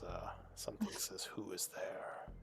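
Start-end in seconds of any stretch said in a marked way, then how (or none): 1.2-2.3 very deep, rumbling, rolling whisper. Voicing a very large resting creature that speaks into minds: very deep rolling voice. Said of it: "Very deep, uh, rolling voice".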